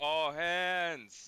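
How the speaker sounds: loud, high yell with "hands" stretched out. Calling the crew to the ship in character: yelling. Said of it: "I'm yelling".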